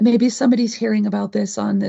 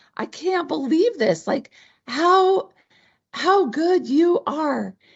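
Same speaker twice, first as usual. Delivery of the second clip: put-on screaming, pitched higher; 7 semitones higher than usual. Retelling opening an unexpected check alone in the car: retelling a scream. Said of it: "I'm just screaming".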